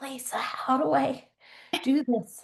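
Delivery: hushed, very slow, high whisper. Retelling a phone call to a promotions lady, imitating own past whisper. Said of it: "I don't know why I was whispering".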